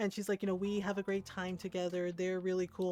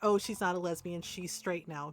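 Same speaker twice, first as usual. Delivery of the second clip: ordinary delivery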